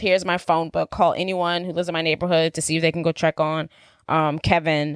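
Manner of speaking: normal talking voice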